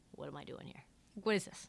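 defeated, weary, resigned, breathy half-whisper. Imitating a veteran player calling out his losing team: imitating a resigned tone. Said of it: "the resignation in his tone is palpable".

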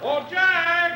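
high, carrying voice.

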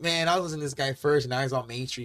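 ordinary talk

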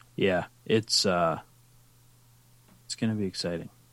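not sounding excited, unenthusiastic. Replying about the Stanley Cup Finals, not sounding excited. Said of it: "You don't sound so excited".

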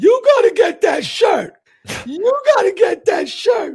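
booming, shrill, insistent outburst, repeated. Retelling a woman reacting to the speaker's shirt, to her man, imitating her being all loud. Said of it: "all loud to her man".

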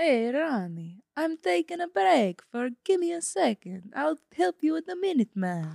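put-on Italian accent. Improvising a scene in an auto body shop: put-on Italian accent. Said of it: "Italian is the accent".

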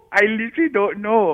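giggly speech broken up by laughter. Answering a complaint about being jealous, laughing while talking. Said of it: "No, I'm laughing".

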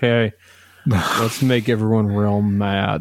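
put-on drunk speech. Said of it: "Like, real drunk".

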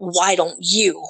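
demonic spirit-type voice. Retelling what a voice on the phone said, in a demonic voice. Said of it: "in this demonic type voice".

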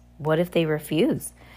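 plain reading voice

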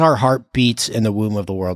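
usual speaking voice

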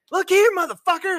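very high, very loud tough-guy outburst. Imagining a famous actor as president going off on another country: Samuel L. Jackson voice. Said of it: "I would love to hear Samuel L. Jackson go off".

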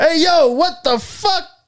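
very high, slow, drawn-out New York man outburst. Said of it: "the most New York video of all time".

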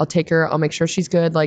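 ordinary talk, nothing marked

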